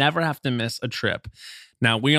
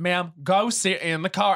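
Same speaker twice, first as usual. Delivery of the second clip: ridiculous Southern police-officer voice, slow, high drawl; 7 semitones higher than usual. Retelling a police officer's arrest, ridiculous Southern accent. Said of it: "the police officer has the most ridiculous Southern accent".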